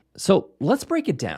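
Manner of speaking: ordinary talk, nothing marked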